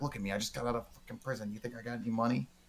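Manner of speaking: furious, confrontational woman's outburst. Retelling a woman refusing a man who begged for money: imitating an angry woman. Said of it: "angry at this dude, like, about to fight him".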